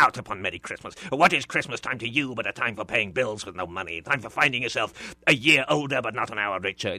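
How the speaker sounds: harsh, vicious, rapid-fire, direct and clipped delivery. Explaining how to voice Scrooge, then performing his lines: harsh Scrooge voice. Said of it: "Everything about Scrooge is harsh".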